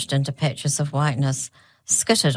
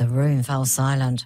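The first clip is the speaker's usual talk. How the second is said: ordinary delivery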